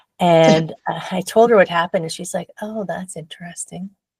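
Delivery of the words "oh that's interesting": mock mild, unbothered, very soft and calm. Retelling the yoga teacher's response, imitating a very calm reply. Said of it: "Very calmly".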